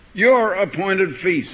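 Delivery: slow, stressed "your".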